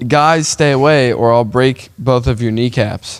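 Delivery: ordinary talk, nothing marked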